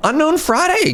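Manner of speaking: voice cracking and breaking up. Streamer thanks a viewer for eighty-four months, voice cracking. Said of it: "my voice is cracking".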